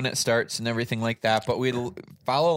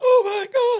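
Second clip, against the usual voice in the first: very high, loud overjoyed shriek.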